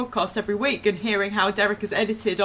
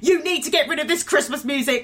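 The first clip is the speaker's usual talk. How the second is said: mock fed-up, angry outburst, pitched up; 6 semitones higher than usual. Retelling finally losing it with whoever picked up the phone, mock-angry rant. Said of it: "I just lost it and went".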